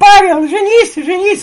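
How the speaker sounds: put-on very high, loud child's voice.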